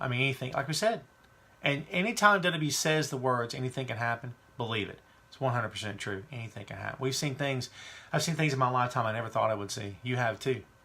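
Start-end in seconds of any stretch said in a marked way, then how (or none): none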